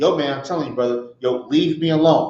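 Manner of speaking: put-on, provoked, pleading tone. Acting out someone being provoked, imitating a provoked warning plea. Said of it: "You pleading with them".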